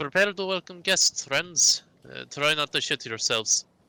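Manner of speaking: nervous, high-pitched shouting. Playing a character, calling across the ship to the crew; shouting to the crew. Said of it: "will shout over to the crew".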